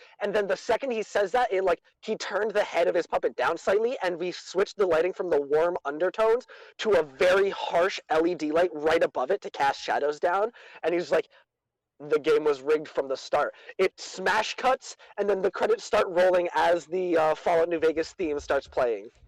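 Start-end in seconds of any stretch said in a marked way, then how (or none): none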